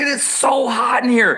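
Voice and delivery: put-on loud American voice. Retelling complaining to students about the hot classroom: retelling own loud American voice. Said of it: "and I went American voice".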